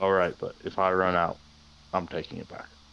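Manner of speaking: gruff character voice.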